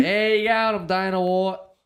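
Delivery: put-on Australian accent. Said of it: "You're just so Aussie though with it".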